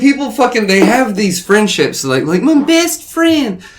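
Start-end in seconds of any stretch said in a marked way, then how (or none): 2.2-3.6 squeaky, very high falsetto male voice. Chatting with others about friendships, say this in a very high-pitched man voice. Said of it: "That was a very high pitched man voice".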